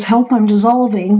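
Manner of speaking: ordinary talk, nothing marked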